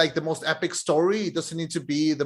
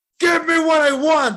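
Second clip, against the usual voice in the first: put-on wrestler-style yelling, higher pitch and louder; 12 semitones higher, 8 dB louder than usual. Retelling a wrestling clip, imitating Batista yelling: imitating Batista yelling. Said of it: "he has a microphone and he's yelling".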